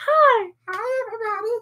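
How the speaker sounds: very high-pitched puppet voice. Discussing voices for their characters, one player shows how Griff should talk: Elmo voice. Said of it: "Why do I sound like Elmo?".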